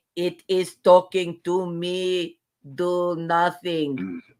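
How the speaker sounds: put-on sudden slow, odd, drawled Russian accent. Recapping a scene and quoting Janeway's line: Janeway's odd Russian accent. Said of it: "where did that accent come from".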